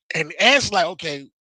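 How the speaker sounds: ordinary delivery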